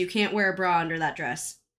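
ordinary delivery

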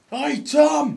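very high, loud shouting.

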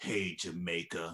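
put-on contemptuous sneer. Imitating the West Germans taunting the Jamaican team: imitating a contemptuous taunt.

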